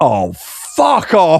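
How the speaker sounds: small, lightly done mild shout. Retelling a reaction while reading a book: imitating own shout. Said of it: "I shouted".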